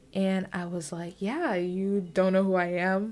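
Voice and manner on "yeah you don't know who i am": mock-joking tone, acted out, louder. Retelling her own reply to a guy who added her on Snapchat, joking.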